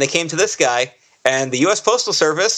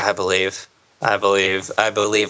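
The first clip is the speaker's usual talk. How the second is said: very low, flat, deep robotic monotone; 8 semitones lower than usual. Retelling a film scene where a girl repeats a line: imitating a robotic voice. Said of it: "like a robot".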